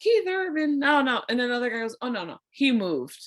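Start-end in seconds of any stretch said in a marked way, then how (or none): 0.0-1.2 put-on slow, heavy, thick Southern accent, drawled. Retelling what an old guy in the street said: thick Southern accent. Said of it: "the thickest Southern accent I've ever heard".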